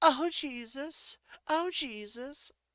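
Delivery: high, shrieking, screaming nun voice. Acting out a scene where the nun character screams: screaming nun. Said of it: "She screams".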